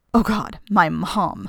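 groaning. Reading a story, Buck hides under the blankets after a knock at the door: groaned. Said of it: "groaned Buck".

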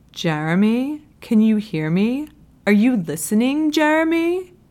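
put-on thick Southern California surfer-bro accent. Narrating a novel where a character calls to Jeremy, in a heavy SoCal bro accent. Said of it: "he affects a SoCal bro accent so heavy".

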